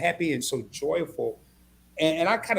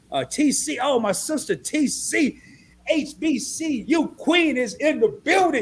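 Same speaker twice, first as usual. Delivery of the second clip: high, loud, slow hype shout. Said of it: "that was my Terrell impression".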